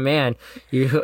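ordinary talk, nothing marked

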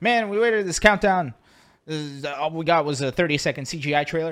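put-on upset grumbling. Retelling how upset fans complained about a trailer: imitating upset fans complaining. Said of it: "a lot of people who were really upset".

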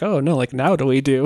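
normal talking voice

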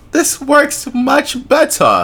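put-on high, slow, drawn-out Yiddish accent.

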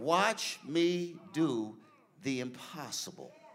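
ever so faint, soft, small voice. Retelling words heard while praying, soft small voice. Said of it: "I heard it ever so faintly".

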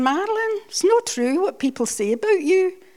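put-on very high, loud Glaswegian accent. Retelling what Alistair said when she set foot in the house, Glasgow accent. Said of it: "I'll do the Glasgow accent".

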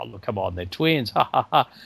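skeptical laughter. Retelling a doubting passenger on a train: imitating someone laughing.

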